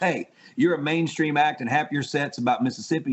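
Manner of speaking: plain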